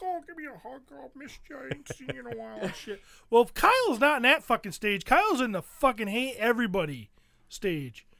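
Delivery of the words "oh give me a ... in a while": mock, very hushed, quiet, doting, affectionate voice. Imitating a father who now wants to hug everyone: imitating dad being affectionate. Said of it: "he likes to hug everybody".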